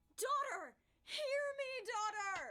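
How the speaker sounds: very loud, drawn-out, feeling-filled calling out. Asked how a script line should be said, performing it with emotion. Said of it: "That was emotion in my voice".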